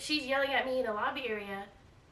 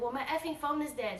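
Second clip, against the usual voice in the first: ordinary talk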